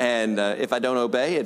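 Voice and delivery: ordinary delivery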